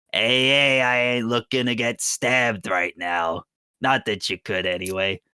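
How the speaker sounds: cagey, defensive fantasy creature voice. Voicing a toad-like man holding hands up defensively: voicing a toad-like smoke creature. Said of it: "you see this man kinda, like, looks at you".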